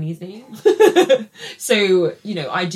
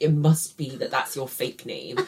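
mocking condescending dismissive voice, quieter; 3 semitones lower, 5 dB quieter than usual. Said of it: "diminishing the fact that, like".

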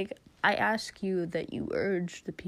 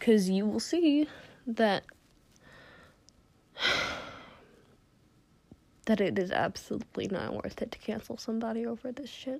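emotional, upset, getting worked up; 3 semitones higher than usual. Speaker urging viewers to read a webtoon story; getting emotional. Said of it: "I'm sorry if I sound like I'm getting emotional".

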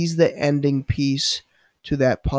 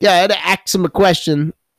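put-on Brooklyn accent, raised, high; 5 semitones higher, 6 dB louder than usual. Retelling what a coworker from brooklyn always says: imitating a brooklyn accent. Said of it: "from Brooklyn".

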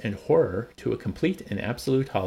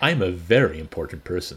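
louder mock self-important, boastful voice. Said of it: "basically name dropping".

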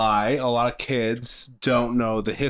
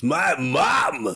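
gruff, tough, big voice; 4 semitones higher than usual. Telling two listeners about a cartoon character, doing a Muscle Man impression. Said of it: "Muscle Man's got a big line, and he goes".

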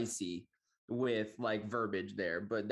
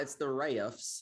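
put-on Southern accent, higher; 3 semitones higher than usual. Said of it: "Is that your Southern accent?".

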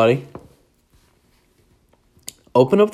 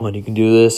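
ordinary delivery

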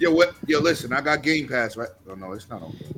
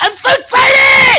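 mock very high, very loud thrilled shriek; 13 dB louder than usual. Mocking how Flamis screams into the controller: imitating Flamis screaming excitedly. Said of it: "Flamis be like".

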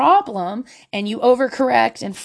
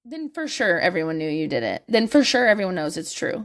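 ordinary talk, nothing marked

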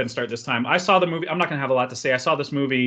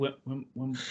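put-on very quiet, sorrowful, slow, drawn-out delivery; 12 dB quieter than usual. Imitating how someone kept saying a word: mock-tragic, slow. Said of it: "kept saying it slowly and more tragically and sadly".

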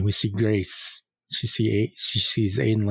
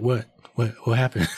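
ordinary talk, nothing marked

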